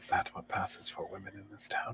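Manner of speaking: hushed, breathy, close, secretive whisper. Stepping close to another character and whispering in his ear. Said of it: "I whisper in his ear".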